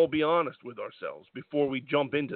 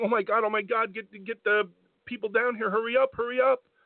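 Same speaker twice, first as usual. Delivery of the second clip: crying voice, pitched much higher than normal; 7 semitones higher than usual. Retelling the Miz's reaction to a woman struggling to breathe, imitating the Miz crying. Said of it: "is actually red-faced and crying".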